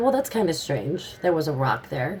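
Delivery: ordinary delivery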